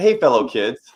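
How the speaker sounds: loud, awkward adult voice trying to sound hip. Joking about sounding like an old person trying to sound cool: mock old person trying to sound cool. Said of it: "sound like an old person trying to sound cool".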